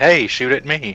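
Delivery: ordinary delivery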